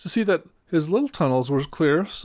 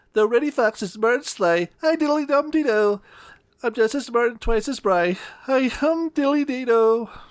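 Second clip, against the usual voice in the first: funny, tiny, small, squeaky, piping voice; 8 semitones higher than usual. Narrator reads Danny Meadow Mouse shouting after the fox leaves, Danny Meadow Mouse squeaky voice. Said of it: "In his funny little squeaky voice, Danny shouted".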